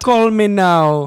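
put-on Jamaican accent. Showing off a Jamaican accent, doing a Miss Cleo Jamaican accent. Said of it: "watch some Clio commercials".

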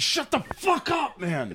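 very high, slow, exasperated, in disbelief. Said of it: "And I'm like".

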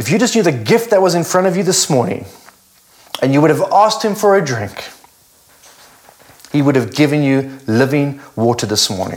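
choked-up voice full of emotion. Declaring a Bible verse over listeners, getting emotional. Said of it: "getting emotional".

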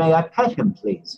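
put-on English accent with pitch lifted up. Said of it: "pardon my English accent".

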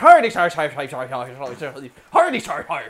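sing-song Irish leprechaun. Recapping a Simpsons episode, speaker imitates the leprechaun in a stereotyped Irish leprechaun voice. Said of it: "The biggest Irish stereotype you can imagine".

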